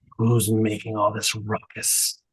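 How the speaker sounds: deep, raspy growl, dropped low. A game master voices Tybalt speaking from behind a player's shoulder: deep, raspy voice. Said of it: "deep and raspy, that says".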